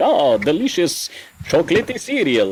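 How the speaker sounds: put-on vampire accent from Transylvania. Describing an old cereal commercial, doing the Count Chocula Transylvanian accent. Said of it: "what we assume is a Transylvanian accent".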